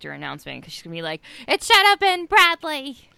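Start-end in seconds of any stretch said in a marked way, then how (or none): 1.5-2.9 very high, very loud, shrill, outraged angry yell. Imitating a mom yelling at the tv during an announcement: imitating mom yelling at the tv. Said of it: "she's gonna be yelling at the T V".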